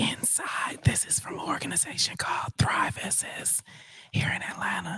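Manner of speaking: whispered voice. Unboxing a box for an ASMR video: whispering. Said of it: "how hard it is to whisper".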